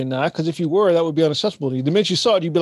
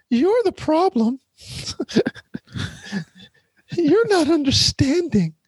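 very high, put-on Southern belle accent; 11 semitones higher than usual. Mocking a certain kind of woman to co-hosts, in a mock Southern belle voice. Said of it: "That's my voice of a Southern belle".

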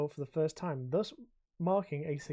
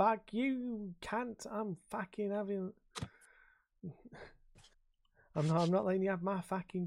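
mock Cockney accent, higher pitched; 4 semitones higher than usual. Acting out what some people said to him, in a Cockney accent. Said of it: "I've not gone Australia. I've gone fucking straight Cockney".

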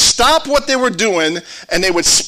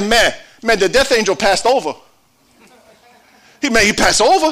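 put-on Cajun accent. Saying the word Passover almost sounds Cajun, then a Cajun accent. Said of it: "It almost sounds Cajun".

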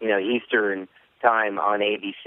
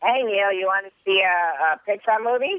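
very high, clean comic voice; 11 semitones higher than usual. Answering a request for a PG impersonation: PG Mister Chow impersonation. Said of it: "can you do me an impersonation of Mister Chow P G?".

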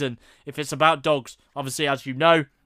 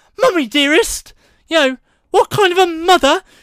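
exaggerated fake British accent, pitched very high; 14 semitones higher, 6 dB louder than usual. Quoting a line from a movie character, in an exaggerated British accent. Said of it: "could get any more British than that".

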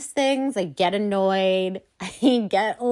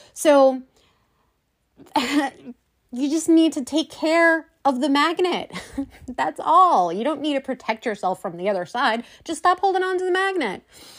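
passionate, heated, irritated, pitched up; 5 semitones higher than usual. Speaking to listeners, heated and annoyed. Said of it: "I feel a little heated and passionate about this and annoyed".

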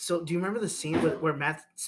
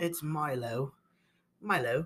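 put-on British accent, said the British way. Repeating a character's new name in a joking way: put-on British accent. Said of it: "He just called in a British accent".

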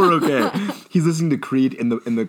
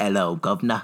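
low-pitched fake British accent, American attempt; 5 semitones lower, 4 dB quieter than usual. An American tries out a greeting in a fake British accent. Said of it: "an American Doing a fake British".

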